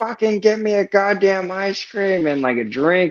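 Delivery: mock screaming. Retelling how a woman yelled at him, imitating someone screaming. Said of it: "But she all screaming at him".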